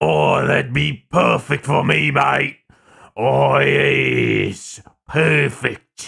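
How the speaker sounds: rough, guttural, growly werewolf voice, drawn-out yes. Showing off a voice they could do for a werewolf side character, guttural werewolf voice. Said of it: "I can do guttural".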